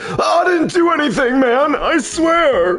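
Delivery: very high, weepy crying voice. Trying to recall the voice given to a character, showing Mister Saint's crying voice. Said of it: "when he's crying, I make it more like".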